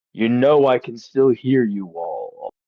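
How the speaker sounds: regal, stately, royal-sounding tone. As the listeners leave, a voice calls after them in a deep regal Trandy voice. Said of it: "a very deep, familiar-ish voice ... more regal tone".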